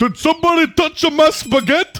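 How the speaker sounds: exaggerated Italian accent impression. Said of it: "you've got that one".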